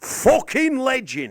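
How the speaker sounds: partly convincing put-on English accent, loud and high. The speaker shows the accent he hears in the mirror; put-on english accent. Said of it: "the English accent that I need to nail".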